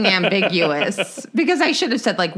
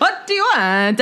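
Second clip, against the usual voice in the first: imitated Latin man's accent, much higher; 3 semitones higher than usual. Retelling what a man asked him when he wanted a fishing pole, in a Latin man's accent. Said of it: "That was a heck of an accent you did there".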